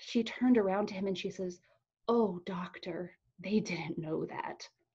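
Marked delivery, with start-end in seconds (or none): 2.1-4.7 quiet, soft, sorrow-filled put-on voice. Retelling what the nurse said to the doctor, imitating her sorrowful voice. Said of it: "the sorrow in her voice".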